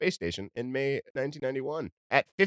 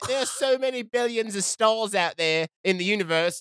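pitched-up, attempted put-on British accent; 8 semitones higher, 3 dB louder than usual. Asked how to do a british accent, trying it out in an attempted british accent. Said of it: "How do you do a British accent?".

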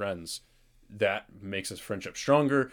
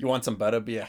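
put-on Boston accent; 2 semitones higher than usual. Doing a Harry Potter bit with a friend, Boston accent. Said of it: "I'm trying to do this Boston accent".

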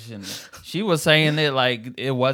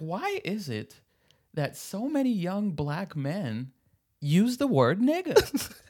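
put-on high, slow, ranting older woman's voice; 7 semitones higher, 5 dB quieter than usual. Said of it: "You gotta do the voice".

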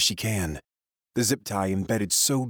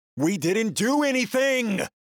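very high, raw-throated, desperate scream; 14 semitones higher than usual. Reading a story aloud, a caged character protests: screaming. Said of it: "but I still scream".

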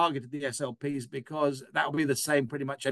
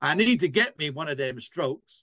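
put-on American Alabama accent; 3 dB louder than usual. Speaker quotes himself talking to the person next to him: put-on Alabama accent. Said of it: "I put on my best American Alabama accent".

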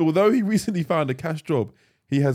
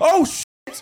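high, loud, panicked yelp. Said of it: "he's panicked. He's like".

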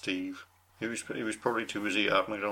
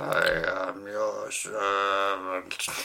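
slow, drawn-out, deep and creepy villain voice; 4 dB louder than usual. Recalling a creepy episode, the speaker quotes a Dalek in a slow deep Dalek voice. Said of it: "saying it quite slowly in a deep Dalek voice".

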